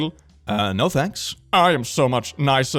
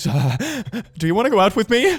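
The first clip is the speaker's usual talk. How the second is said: faked, put-on quivering, trembling voice; 8 semitones higher than usual. Acting out a self-described nice guy asking someone out, mock quivering voice. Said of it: "With quivering voice".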